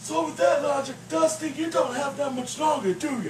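teasing puppet voice. Puppet co-host teasing Dusty in a sketch, sassy teasing puppet voice.

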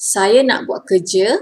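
plain

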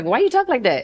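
put-on voice jumped way up, very high kid voice. Retelling what classmates asked in junior high: imitating kids in a high voice. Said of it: "my voice going high".

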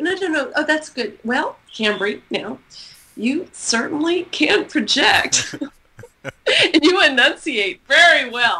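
high, slow speech, fighting back laughter.

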